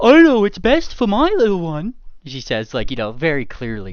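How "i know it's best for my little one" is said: mocking put-on voice, higher and louder. Retelling how a woman mimics her father to make him sound foolish: mocking his voice. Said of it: "She puts on like a little bit of a voice".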